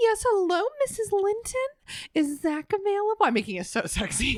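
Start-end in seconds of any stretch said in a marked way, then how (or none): 0.0-3.2 very high, polite, sweet put-on little-girl voice. Recounting phoning a child's mother, speaker greets her: put-on polite sweet little girl voice. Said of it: "my polite, sweet little girl voice".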